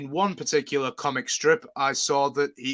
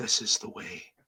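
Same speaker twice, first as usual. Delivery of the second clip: quieter imitation Scottish accent; 4 semitones lower, 7 dB quieter than usual. Imagining David Tennant saying a quoted line, in his Scottish accent. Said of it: "what if David said that in his Scottish accent?".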